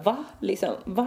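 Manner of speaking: ordinary talk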